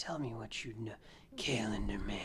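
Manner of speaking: very quiet, slow, low, sultry seductive whisper. Acting out a character's line to another character, in a mock-seductive whisper. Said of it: "whispering, like seductively".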